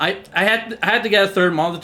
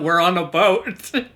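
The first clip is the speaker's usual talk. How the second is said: plain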